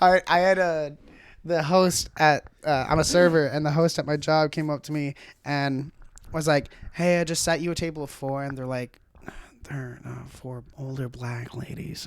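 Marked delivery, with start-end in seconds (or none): 6.9-12.1 put-on whisper, lower and quieter. Retelling a host at work announcing a table: imitating someone whispering. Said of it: "Don't whisper that".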